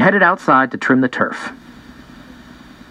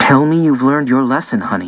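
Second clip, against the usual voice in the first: ordinary delivery, nothing marked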